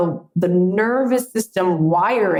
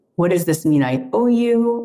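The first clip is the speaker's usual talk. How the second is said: tearful, crying voice. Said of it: "I was crying".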